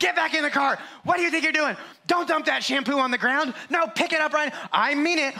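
acted-out, shrill, very high-pitched yelling. Retelling a mom in a store scolding her kids: imitating a mom yelling. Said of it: "And mom was yelling".

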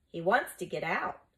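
usual speaking voice

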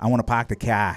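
put-on Boston accent with the r sounds dropped. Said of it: "when they say".

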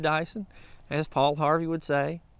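ordinary talk

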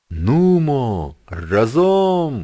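high, drawn-out heave-ho chanting call, "Нумо" stretched. Sailors lifting crates from a ship's hold shout each time, shouted. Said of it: "щораз кричали вони".

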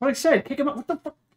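high, thickly sarcastic, mock confused tone.

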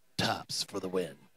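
creeper voice. Calling the next throw to another speaker: creepy voice. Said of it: "That was kind of a creeper voice".

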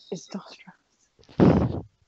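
hushed, soft, breathy whisper. Saying a name into a mirror in the game, starting off quiet. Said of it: "I'll start off quiet".

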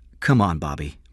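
ordinary delivery

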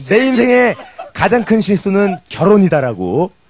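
ordinary talk

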